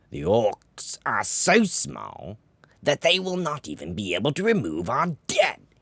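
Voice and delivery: very loud, scornful snarl, pitch rising. Narrating a story, Verog answers the Imperator before the council: snarling Verog voice. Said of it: "a mage lord with many victories and an unusual knack for both disobedience and survival. / his thoughts ever on rising, / Impatient, / The pitch of [name]'s voice rose".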